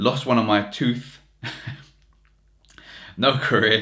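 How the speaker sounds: reading aloud while laughing. The speaker, reading aloud to listeners, is laughing while reading. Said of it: "sorry for laughing".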